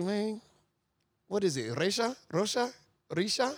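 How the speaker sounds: put-on Salvadoran-accented speech. Retelling the dad calling back and guessing a name: imitating a dad's Salvadoran accent. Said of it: "my son Salvadorian ain't great".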